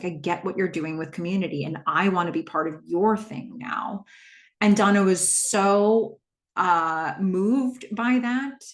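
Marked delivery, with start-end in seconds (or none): none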